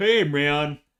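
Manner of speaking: put-on high, loud surfer dude voice. Listing possible character voices, the speaker tries one out: surfer dude voice.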